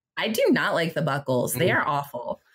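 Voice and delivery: snide, catty, bitchy put-on voice. Speaker criticizing someone's boots and buckles, trying to sound catty and bitchy. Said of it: "trying to bring my voice out here and sound very catty and bitchy".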